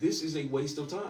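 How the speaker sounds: normal talking voice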